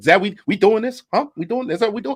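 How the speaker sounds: rough, high-pitched put-on impression voice. Doing a bad impersonation of Denzel Washington: bad Denzel Washington impression. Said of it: "That's a bad impersonation".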